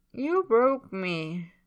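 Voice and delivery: indistinct mumble, words run together. Reading a character's reply to another character late at night, mumbled. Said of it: "Tyler mumbles".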